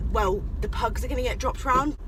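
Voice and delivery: ordinary talk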